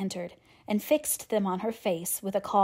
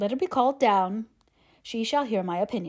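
ordinary delivery

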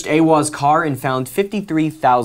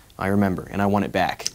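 ordinary talk, nothing marked

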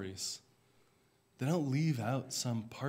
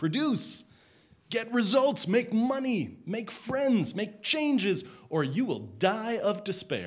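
mock sarcastic, high, loud voice. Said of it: "two millennia old sarcasm".

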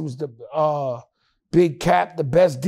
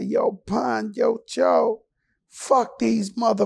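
small, high, little voice; 5 semitones higher than usual. Retelling a fight, a voice calls out to him and Pun: Mike Tyson little voice. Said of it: "we hear this little voice say".

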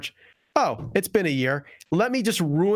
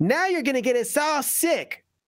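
very high, bad put-on Italian old-woman accent; 10 semitones higher than usual. An old Italian woman on a train, in a story: not very good Italian accent. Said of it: "That's a not a very good Italian accent".

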